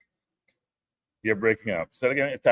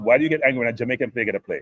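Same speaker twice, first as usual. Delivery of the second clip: ordinary talk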